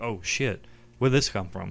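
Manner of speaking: ordinary talk, nothing marked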